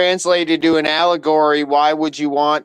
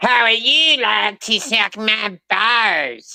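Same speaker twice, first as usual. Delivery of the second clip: slow, stretched-out, high-pitched put-on voice; 6 semitones higher than usual. Repeating another speaker's line, Cartman impression. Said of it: "that was a good impersonation".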